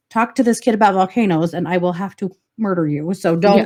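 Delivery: ordinary delivery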